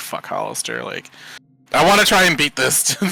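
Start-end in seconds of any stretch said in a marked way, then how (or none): 0.0-0.8 muttering quietly under breath, quieter. Acting out a character's aside while casting a spell again: muttered under breath. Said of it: "say that under my breath".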